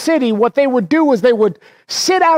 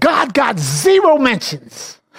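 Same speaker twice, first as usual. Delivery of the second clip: scornful, mocking voice with swooping pitch. Recounting what a woman said in a meeting: retold mocking voice. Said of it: "in a mocking voice".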